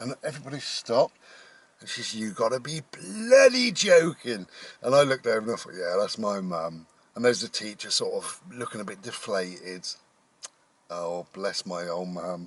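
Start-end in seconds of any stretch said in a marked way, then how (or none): 2.9-3.7 "bloody" pulled long and stretched out. Retelling mum's outburst in front of a teacher, imitating mum with drawn-out 'bloody'. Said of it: "it was a drawn out bloody".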